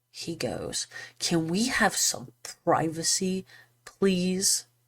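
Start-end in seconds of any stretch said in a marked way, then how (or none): 1.1-4.6 mock unpleasant, stern, not-kind-at-all tone. Retelling what a doctor said on being approached: imitating a stern, awful tone. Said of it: "in a very stern and, I think, awful tone".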